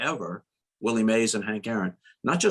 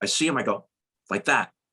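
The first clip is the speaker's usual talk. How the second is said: ordinary talk, nothing marked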